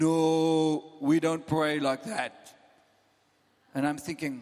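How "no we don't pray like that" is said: put-on German accent, slow, with stretched "no". Recalling a voice heard while praying for the fire, say it in a German accent. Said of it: "this German voice".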